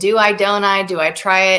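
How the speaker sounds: normal talking voice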